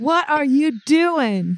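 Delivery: slow, deliberate, patronizing, talking-down delivery. A player in the game talks to a tiny animal, real slow and loud. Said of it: "I'm going to talk real slow, real loud, like I think it's dumb".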